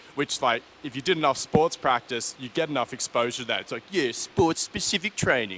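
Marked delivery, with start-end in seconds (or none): 4.1-5.6 goofy mocking put-on voice, swooping sing-song. Naming a training term, then apologizing for using a silly voice. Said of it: "I'll stop using the silly voice every time I talk about S P P".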